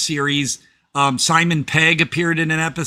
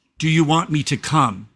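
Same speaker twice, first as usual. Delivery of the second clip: put-on deep, sultry voice. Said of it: "his voice is real deep and sultry".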